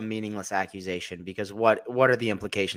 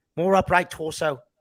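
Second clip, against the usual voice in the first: put-on South African accent, a bit off, pitched up; 8 semitones higher, 4 dB louder than usual. Imitating him from the online content in a South African-sounding accent. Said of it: "That was a South African accent".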